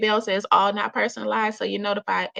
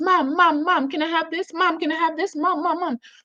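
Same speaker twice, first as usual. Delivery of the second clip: put-on loud, pestering child voice hollering over and over; 7 semitones higher than usual. Imitating kids in a store calling for their mom: imitating kids hollering. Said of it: "hollering at the top of their lungs".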